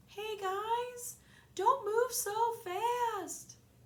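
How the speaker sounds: sociable, very slow, very high friendly drawl. Narrator reads a voice calling from the hall: sociable, slow-moving voice. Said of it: "a sociable but slow-moving voice called".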